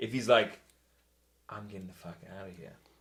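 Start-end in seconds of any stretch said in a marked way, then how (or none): 1.5-2.7 quick, quiet whispering. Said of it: "maybe he's whispering".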